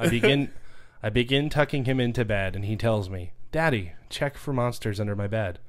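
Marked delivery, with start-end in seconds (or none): none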